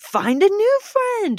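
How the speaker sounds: mock pushy delivery, high and loud.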